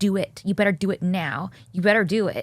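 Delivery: very stern, muttered under the breath. Retelling what he said on the red carpet: imitating a stern under-the-breath mutter. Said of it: "very stern and under his breath".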